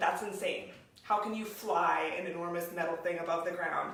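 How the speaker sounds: ordinary talk, nothing marked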